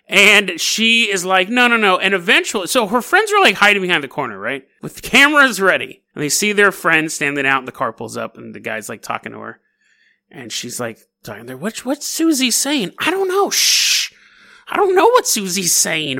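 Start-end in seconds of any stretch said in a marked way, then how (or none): 11.5-16.2 chattering 1950s housewife voice. Telling a story, the speaker voices friends hiding behind a corner in 1950s housewife voice. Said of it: "Apparently they're all 50s housewives".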